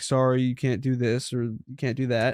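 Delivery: normal talking voice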